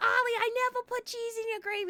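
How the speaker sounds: very high-pitched put-on New York accent. Retelling Helen answering Ollie, Helen in a New York accent. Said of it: "I don't know why they have New York accents".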